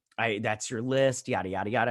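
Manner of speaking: ordinary talk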